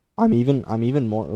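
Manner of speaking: loud voice breaking partway through. Playing a game and worrying about the next encounter: voice cracking. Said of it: "that voice crack".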